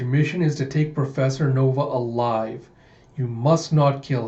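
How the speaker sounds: usual speaking voice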